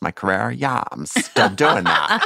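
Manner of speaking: put-on Valley girl accent, laid on thick. Retelling a conversation, the speaker quotes a woman answering a man in a Valley girl voice. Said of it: "says the next line as though she's a Valley girl".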